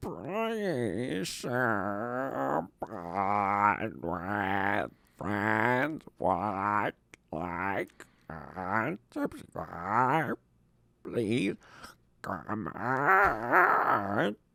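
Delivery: silly put-on troll voice with swooping pitch. Reading the podcast sign-off, trying their best troll voice. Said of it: "This is my uh, best troll voice".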